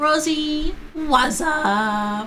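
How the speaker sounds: cracking voice, rising in pitch, drawn out. The speaker greets Rosie, voice cracking. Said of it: "Voice crack there".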